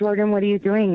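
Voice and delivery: gentle, careful, calm, unstartling voice. Retelling calling to a sleepwalking son: imitating own quiet voice. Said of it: "very quietly was like".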